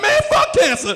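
play-acted weeping, high crying lament. Retelling friends at the back of a funeral: imitating crying at a funeral. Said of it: "in the back of that funeral crying like".

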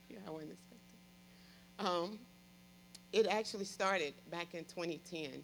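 choked-up voice, on the verge of crying. Sharing their own story with the audience: on the verge of tears. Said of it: "I don't know why I'm about to cry".

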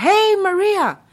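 put-on very friendly tone. Retelling how a police officer called out: imitating a very friendly tone. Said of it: "in a very friendly tone".

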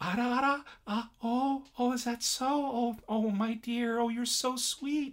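very high, slow, sweet, doting polite-lady voice. Imitating the maid character in the show, a sweet polite lady. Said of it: "she speaks very, very".

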